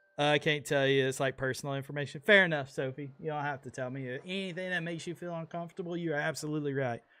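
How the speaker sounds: ordinary delivery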